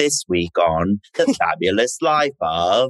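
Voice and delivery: put-on TV narrator announcer delivery. Recalling a habitual impersonation of a TV show narrator, The Fabulous Life of narrator voice. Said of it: "I always would do his impersonation. I would always be like".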